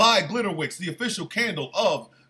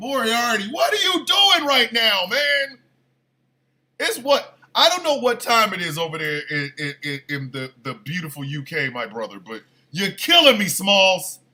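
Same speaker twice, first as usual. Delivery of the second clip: openly angry, calling-out tone. Calling out a person over the time zone gap, sounding angry. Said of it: "Now I sound like angry".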